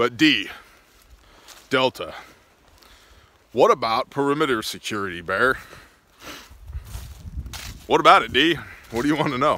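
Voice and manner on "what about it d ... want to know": loud, facetious mocking tone. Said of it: "I'm being a facetious a-hole".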